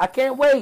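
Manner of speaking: sarcastic fake excitement. Listing next week's matches, then saying it with sarcastic fake excitement. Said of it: "Can you hear the excitement in my voice?".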